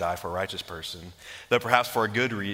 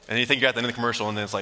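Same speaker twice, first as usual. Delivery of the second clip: usual speaking voice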